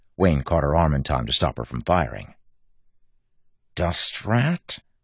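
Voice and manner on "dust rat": muttered retort, pitched up. Renette, after Wayne stops her from firing, mutters back at the speaker. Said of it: "she muttered".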